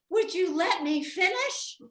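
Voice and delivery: put-on loud, high, very exasperated little girl's outburst. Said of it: "very exasperated".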